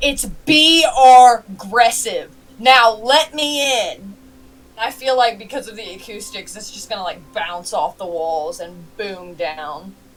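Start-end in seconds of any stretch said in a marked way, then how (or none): 0.0-4.1 very slow, high, drawn-out top-of-the-lungs yell. Game player voicing a character demanding to be let in, yelling at the top of her voice. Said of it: "she's gonna yell at the top of her voice".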